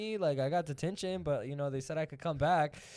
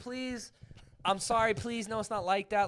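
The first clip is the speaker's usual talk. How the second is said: put-on pleading voice, higher; 4 semitones higher than usual. Retelling begging a teacher not to send them away: imitating own pleading. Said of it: "I was literally pleading".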